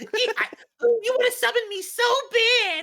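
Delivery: very high, drawn-out, stretched dub voice. Answering a joke about the dub voice: Ojama Yellow dub voice. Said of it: "that was terrible. That was very good".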